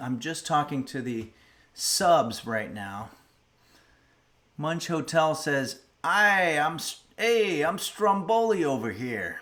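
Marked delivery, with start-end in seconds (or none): 6.0-9.4 put-on New Jersey accent, pitched up. Reading a subscriber's chat message aloud, the speaker does a new jersey accent. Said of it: "I'm putting a New Jersey accent to it".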